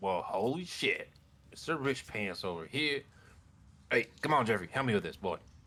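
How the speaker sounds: rat character voice. Voicing a rat reacting to a gift of cheese: voicing a rat. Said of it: "and he's like".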